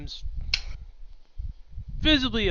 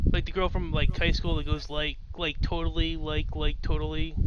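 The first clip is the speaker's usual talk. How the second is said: ordinary talk, nothing marked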